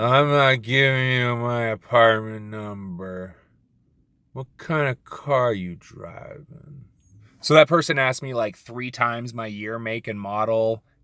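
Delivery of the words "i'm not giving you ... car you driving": lazy, slow, drugged-sounding drawl. Imitating a customer who sounded on drugs: drawling like on drugs. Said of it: "I'll do my best impersonation".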